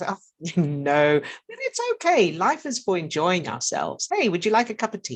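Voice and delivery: good-humored, laughing tone. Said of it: "It can be in a good-humored way".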